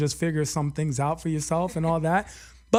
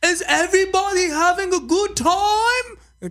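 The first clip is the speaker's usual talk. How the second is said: very high, slow, loud fake DJ accent; 6 dB louder than usual. Mocking how club DJs talk to the crowd: imitating a DJ's fake accent. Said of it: "they always fake like they have an accent".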